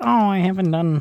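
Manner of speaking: high-pitched, complaining, nagging put-on voice. Speaker quotes what she's always saying, nagging imitation of her. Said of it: "I keep saying it in, a, in like a nagging voice".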